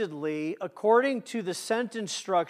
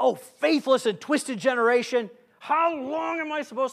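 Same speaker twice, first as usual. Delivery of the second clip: exasperated, fed-up, raised and irritated impatient tone; 6 semitones higher, 5 dB louder than usual. Showing how not to read a line of Jesus: irritated, impatient tone. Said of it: "Don't read it like that".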